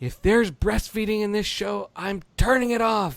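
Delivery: mock yelling. Retelling how Allie reacted to a scene in the show; imitating Allie yelling at TV. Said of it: "Allie starts yelling at the TV".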